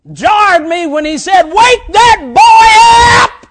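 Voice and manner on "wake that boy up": thundering, very slow, drawn-out preacher's shout. Retelling how the preacher woke him in church: retelling a thundering shout. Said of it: "He thundered out".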